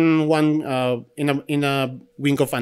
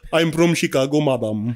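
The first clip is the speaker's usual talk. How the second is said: put-on heavy Indian accent. Imitating a phone scammer claiming to be from chicago: imitating scammer's thick indian accent. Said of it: "may thick Indian accent pa".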